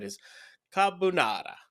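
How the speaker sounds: put-on Italian accent. Telling Jack what you had for breakfast: best attempt Italian accent. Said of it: "if I did my best like Italian accent there".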